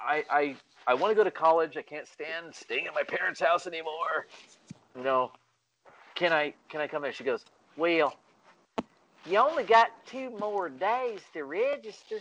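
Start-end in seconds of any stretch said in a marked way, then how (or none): 7.8-12.2 nice, gentle, sweet Southern woman's voice, pitched up. Retelling how they ended up at college, quoting Miss Freeman in her nice Southern voice. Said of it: "she had that really nice Southern voice".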